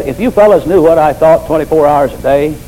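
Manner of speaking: ordinary talk, nothing marked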